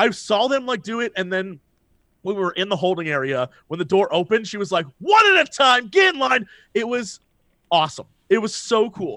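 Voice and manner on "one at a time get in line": put-on, high, barked yell. Retelling waiting in a holding area, imitating a woman yelling at the crowd. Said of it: "one was like yelling at the crowd".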